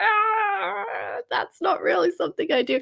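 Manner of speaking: high, creaky, self-mocking voice.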